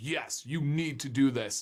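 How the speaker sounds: plain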